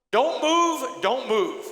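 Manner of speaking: loud, high, top-of-the-lungs scream. Retelling a SWAT cop standing over the speaker, imitating the cop screaming. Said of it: "he is screaming at the top of his lungs".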